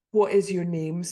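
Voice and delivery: ordinary talk, nothing marked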